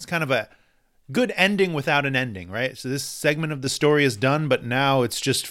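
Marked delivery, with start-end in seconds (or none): none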